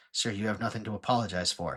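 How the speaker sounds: very quiet, hushed, softly spoken, low-key voice. Telling a story about an apology, quoting the actor's answer: retelling a very quiet reply. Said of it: "very quietly goes".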